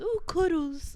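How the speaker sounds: put-on cutesy, very high-pitched baby talk voice. Asked about the word cuddles, the speaker mimics how everyone says it, in a mocking baby voice. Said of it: "Like it's like a baby voice word".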